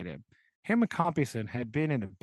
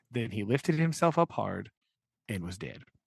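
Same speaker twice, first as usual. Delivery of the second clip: normal talking voice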